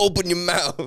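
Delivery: high, laid-on put-on New Orleans man's accent. Retelling a reality show challenge host's line: imitating a New Orleans accent. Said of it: "doing, like, a New Orleans guy the whole time".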